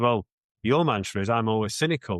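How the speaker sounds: ordinary talk, nothing marked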